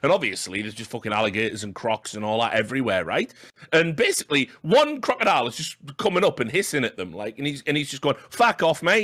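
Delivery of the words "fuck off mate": put-on Cockney accent, higher pitch. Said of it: "I don't know why he's a cockney all of a sudden".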